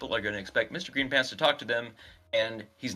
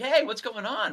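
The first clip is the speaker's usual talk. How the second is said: acted talkative man voice, higher; 12 semitones higher, 4 dB louder than usual. Acting out a guy who comes into a waiting room: imitating a chatty stranger. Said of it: "have this guy come in and be like".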